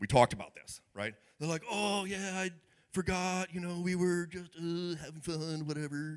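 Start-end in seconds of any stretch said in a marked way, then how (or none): 1.7-6.2 put-on high, drawn-out teenager voice. A parent retells their kids' excuse for coming in late, imitating a teenager. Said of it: "That's my teenager's voice".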